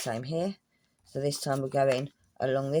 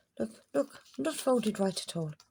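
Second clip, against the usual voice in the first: Irish accent in a higher register; 8 semitones higher than usual. Someone showing how to glue a paper craft spots a bad fold, Irish accent. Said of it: "that sounds like I'm taking the mickey out of the Irish accent".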